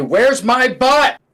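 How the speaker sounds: very high, loud, furious, demanding tone. In a tabletop game, a player walks up to a mage to intimidate him: very angry. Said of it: "I'm going to be so angry".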